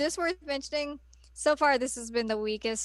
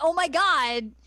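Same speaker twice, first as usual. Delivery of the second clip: mock panicked, high, loud freaking-out exclamation; 5 semitones higher, 6 dB louder than usual. Retelling own reaction to the game's ending: retelling own freaking out. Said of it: "I was freaking out".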